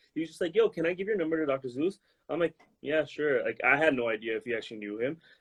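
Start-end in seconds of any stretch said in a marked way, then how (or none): 0.6-2.0 put-on casual, throwaway, nonchalant, offhand tone. Retelling how he asked to pass their number to Dr. Zeus, imitating a nonchalant tone. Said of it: "he said it so nonchalant".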